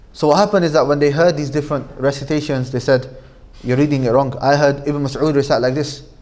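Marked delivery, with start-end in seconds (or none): none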